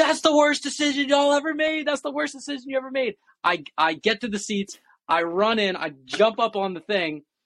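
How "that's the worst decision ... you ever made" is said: very high, all-out full-lung scream. Recalling running alone through the concourse after the coin flip: retelling a scream. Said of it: "I'm screaming at the top of my lungs".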